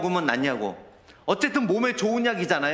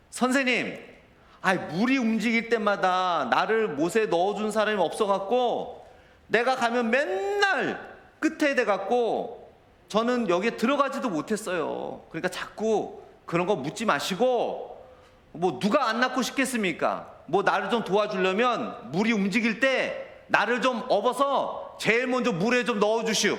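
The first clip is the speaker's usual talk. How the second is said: rude, grumbling, impolite tone with no deference; 3 semitones higher than usual. Speaker acting out the sick man answering the Lord, mock-impolite complaining. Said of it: "절대 공손한 투가 아닙니다".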